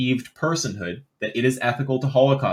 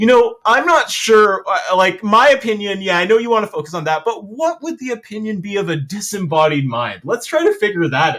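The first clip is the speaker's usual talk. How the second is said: high, loud, play-acted sarcastic and mocking rambling; 8 semitones higher, 5 dB louder than usual. Making fun of an imagined debater dodging a question: mocking imitation of an evasive answer. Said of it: "I have to make fun of that".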